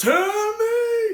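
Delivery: very high, loud false voice, shrieked. Show a habit of the actor playing the Seventh Doctor, in Sylvester McCoy's false voice. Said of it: "he goes into this false voice".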